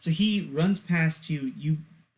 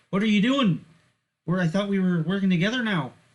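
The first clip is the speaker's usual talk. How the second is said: put-on Canadian-accented character voice; 4 semitones higher, 4 dB louder than usual. Voicing a researcher character turning to a player: canadian accent. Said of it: "It's Canadian".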